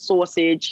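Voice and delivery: sausage said with New York accent. Pointing out their own new york accent on the word sausage. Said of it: "Notice my New York accent".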